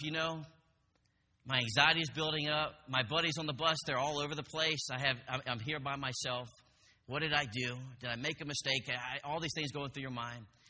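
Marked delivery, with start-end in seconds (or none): none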